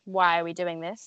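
usual speaking voice

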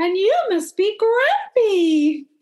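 very high fairy-tale princess voice. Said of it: "make your voice go about 20 octaves higher".

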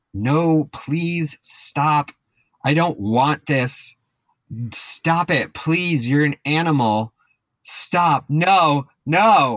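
high, pleading screams at the top of the lungs. Retelling how a woman screamed as a man carried her out, imitating a woman screaming. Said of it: "as she is screaming at the top of her lung".

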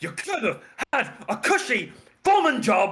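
very high, shrill, all-out scream. Playing your character in a game, hitting an enemy, screaming at the enemy. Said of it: "I'm just screaming at it".

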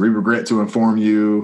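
ordinary delivery

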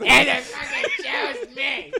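put-on high, loud, shrill, drunk-sounding voice. Telling friends a story about a cat, the speaker sounds like a drunk TJ Miller. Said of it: "You sound like a drunk TJ Miller".

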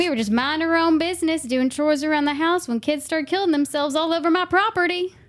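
put-on country accent. Quoting a movie line for a guessing game, in a country accent. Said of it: "I should have got it with the country accent".

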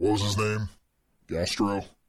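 soft, hushed beast voice. Narrating a role-play scene, the storyteller speaks as the Beast, Beast voice. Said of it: "So, the beast says".

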